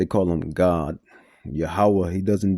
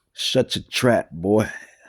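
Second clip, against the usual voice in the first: put-on slight southern twang; 3 semitones higher than usual. Quoting an old teacher telling a boy off, slight southern twang. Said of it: "He had a little southern twang too".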